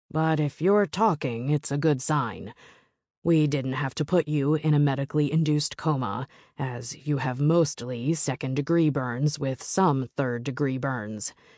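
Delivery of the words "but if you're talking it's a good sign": ordinary delivery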